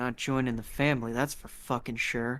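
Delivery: low muttering under the breath. Voicing a character reacting to an offer of family: muttering under his breath. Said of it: "Kinda mutters under his breath".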